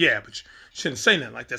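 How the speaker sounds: ordinary delivery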